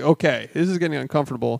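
ordinary talk

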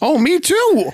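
very high voice cracking way up. Retelling a scene where Screech answers Violet at the table, do Screech with a fake voice crack. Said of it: "I was trying to make my voice crack".

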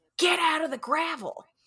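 play-acted, very high, shrill shout. Retelling how a woman on a walk shouted at a man, retelling a shout. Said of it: "she shouts at him".

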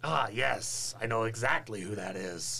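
very loud, booming, dripping sarcasm. Answering another character's address in character: sarcastic. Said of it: "that was sarcasm".

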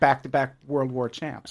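ordinary delivery

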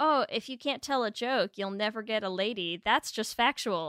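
ordinary talk

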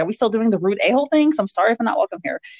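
cross, angry, talking-back tone. Retelling a character's reply to a rude greeting: imitating an angry reply. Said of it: "And she responds angrily".

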